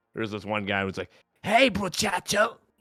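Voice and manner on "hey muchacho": very high, loud, goofy funny character voice. Imitating one player's one-lifer character in a game, in a funny unique character voice. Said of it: "really funny, unique voice".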